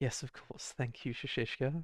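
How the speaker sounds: struggling to stay composed. A character pacing around thanks shashishka, barely holding it together. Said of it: "she's trying to keep it together".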